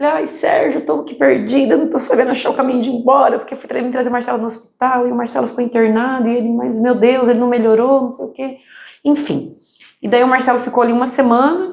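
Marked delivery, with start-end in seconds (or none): 0.1-8.6 acted, tearful voice, speaking through tears. Retelling a phone call to her father-in-law while lost: retelling her own crying call. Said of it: "liguei pro meu sogro chorando".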